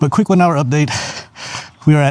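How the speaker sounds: panting, winded, out-of-breath voice.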